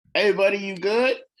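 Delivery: very high, loud calling yell. Calling down to a vanished companion while walking over: yelling in character. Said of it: "you're just yelling that?".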